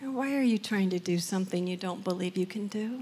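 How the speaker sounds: imitated soft, gentle voice. Quoting what he asked when you still weren't losing weight, retelling a gentle question. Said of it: "he just gently goes".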